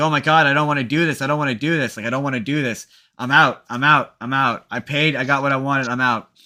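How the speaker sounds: mock panic, acted freaking out. Speaker recounting a movie scene where a character freaks out, imitating a panicked freak-out. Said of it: "he freaks out. He's like".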